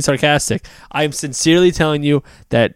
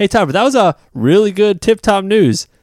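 higher, sarcastic, fake-praising tone. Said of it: "I was being sarcastic".

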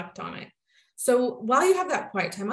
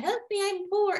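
very high, joking, playful pleading tone; 11 semitones higher than usual. Retelling a woman's joke about money, jokingly quoting her. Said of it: "she's jokingly saying".

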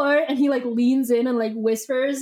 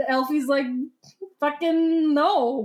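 plain

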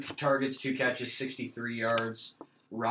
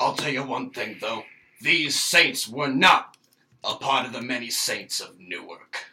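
loud, put-on boomer voice; 7 dB louder than usual. Commenting on a team's potential, doing a little boomer impression. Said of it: "That was my little boomer impression there".

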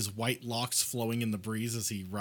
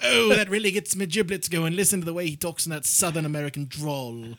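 high, swooning mock posh English accent. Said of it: "and they're like".

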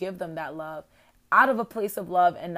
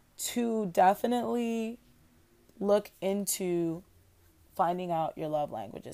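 super slow, halting, broken up mid-phrase; 2 semitones higher than usual. Reading aloud while multitasking, talking super slow. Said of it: "Sorry that I'm talking like super duper slow".

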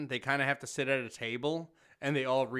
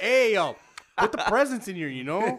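put-on loud, high voice with a slight Spanish-accented twang; 8 semitones higher, 9 dB louder than usual.

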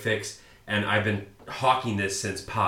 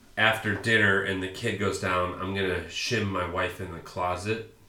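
usual speaking voice

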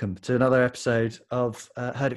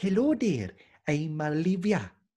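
high-pitched fake Welsh accent drifting into Indian; 5 semitones higher than usual. Teasing the listener who just went to Wales: bad Welsh accent. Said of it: "When I do a Welsh accent, sometimes it turns into an Indian lady".

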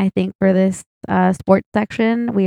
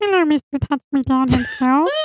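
put-on character voice, higher; 6 semitones higher than usual. Joking with friends about a nickname, voice of Matt's vagina. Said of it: "that's what I imagine if Matt's vagina was to have a voice".

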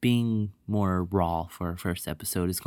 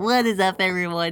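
mocking nerdy voice; 12 semitones higher, 7 dB louder than usual. Mocking the other speaker's greeting by repeating it in a nerd voice. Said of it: "That's exactly what you sound like".

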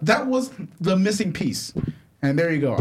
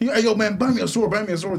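normal talking voice

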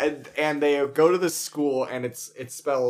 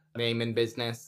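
robotic voice, quieter; 2 semitones lower, 6 dB quieter than usual. Recapping a story as a door voice asks who's there: robot voice. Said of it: "It's this robot voice".

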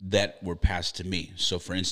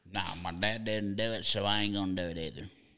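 negative voice with very strong put-on Southern accent; 2 semitones higher, 3 dB quieter than usual. The speaker voices an imagined person's negative attitude, in a southern accent. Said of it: "all of your negative commentary voices are very Southern today".

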